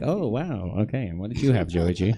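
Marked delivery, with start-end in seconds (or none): 0.0-1.1 put-on amazed, surprised announcer voice, pitched up. Explaining your tone to a player who answered right: surprised announcer voice. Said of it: "It's my announcer voice".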